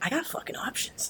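soft, high, amazed whisper in disbelief.

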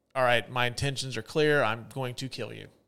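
ordinary talk

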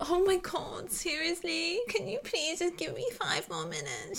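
high, swooping, desperate, begging tone. Retelling how Spencer begged for five more minutes: imitating Spencer's desperate tone. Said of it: "her tone is, she's like".

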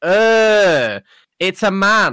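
very high, very loud, shrill, drawn-out jeering shout. Retelling street kids shouting at the speaker while talking to mum: retelling kids' shout. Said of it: "they shouted".

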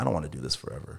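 put-on muttering. Retelling what a man she still needed said one day, retelling a mutter under his breath. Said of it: "under his breath one day was like".

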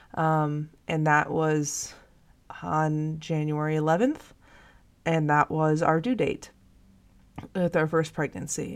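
near tears, fighting to keep from crying. Telling of a new pregnancy after losing the first one, holding back tears. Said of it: "I'm trying not to cry".

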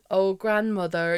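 mock really old-fashioned voice. Retelling a TikTok where someone put on a really old-fashioned voice. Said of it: "putting on this really old-fashioned voice".

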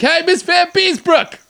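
acted, very high-pitched yell. Retelling calling out to his kindergarten teacher, retelling a yell. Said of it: "And I yell up to my kindergarten teacher".

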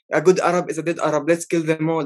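ordinary delivery

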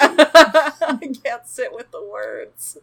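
slow, high-pitched, laughing through the words.

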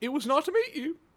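high, cracking character voice with mismatched accent.

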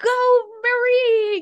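excited, screaming cheer. Retelling cheering on runners from the street corner: imitating own excited screaming. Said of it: "me screaming their names".

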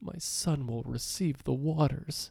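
put-on soft, mournful, sorrowful old man voice. Quoting what the Armored Warrior says every time you die, imitating Armored Warrior's sad old voice. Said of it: "In the saddest old man voice I've ever heard".

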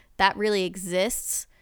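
ordinary delivery

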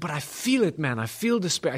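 put-on slight Jamaican accent. Retelling a man's reply during their conversation, slight Jamaican accent. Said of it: "he's got a little bit of a West Indian, like Jamaican type accent".

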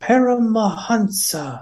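put-on very high-pitched, distinctive voice with Indian accent. Retelling a voice heard during a session: imitating Paramahansa's Indian voice. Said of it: "very particular Indian voice".

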